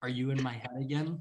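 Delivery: very quiet, hushed half-whisper. Speaking as a character who half-whispers back to a friend: half-whispering in character. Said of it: "he's gonna whisper".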